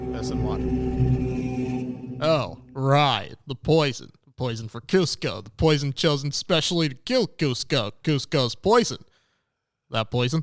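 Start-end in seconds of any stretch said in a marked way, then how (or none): 2.2-10.4 put-on American accent throughout. Speaker taking a turn as the others listen, in an american accent. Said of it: "That was a sick American accent right there".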